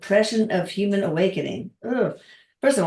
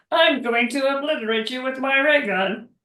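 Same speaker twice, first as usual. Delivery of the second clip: cartoon-style voice, pitched higher; 5 semitones higher than usual. Recalling a cartoon character line: Marvin the Martian impression. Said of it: "That's a very good impression".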